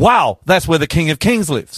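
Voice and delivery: ordinary talk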